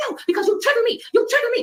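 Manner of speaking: very high-pitched, screaming angry rage. Retelling an argument in a hotel room: imitating Priscilla yelling. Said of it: "Why are you yelling?".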